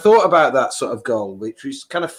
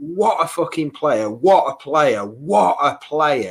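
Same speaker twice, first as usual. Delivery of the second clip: excited bellow at the top of the voice; 3 semitones higher than usual. Speaker recalling his reaction to a player's run, retelling a loud shout. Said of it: "shouted out very loudly".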